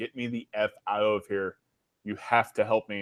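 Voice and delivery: low, put-on gasping dying-creature voice. Recounting a game's dying beholder, imitating a gasping, dying creature. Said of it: "gasping for life".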